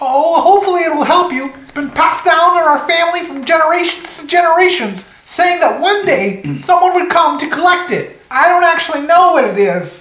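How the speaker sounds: tiny, very high, small gnome character voice. The game master voices a surviving gnome villager answering the players: small gnome villager voice. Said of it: "these like little 3-foot creatures. ... And Sven goes, no. He kind of like looks around the damage causes his village. And there's just three gnomes that remain. ... You hear this small voice".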